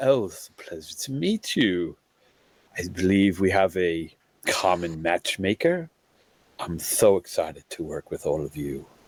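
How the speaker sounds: slightly proper, formal, courteous and polite tone. Voicing a character shaking hands with newcomers: a little formal. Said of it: "a little formal".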